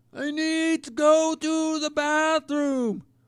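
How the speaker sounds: play-acted very high, very slow, drawn-out shouting. Retelling trying to talk over loud music: imitating himself yelling. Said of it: "I just hate having to yell like that".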